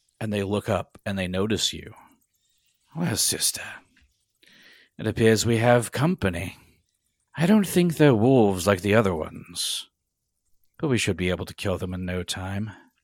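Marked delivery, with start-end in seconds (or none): 2.9-12.7 acted, put-on woman character voice.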